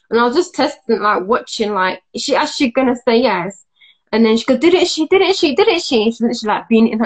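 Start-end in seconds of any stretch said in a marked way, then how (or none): 4.5-6.0 high, pushy, in-your-face taunting. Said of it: "right in her face like that".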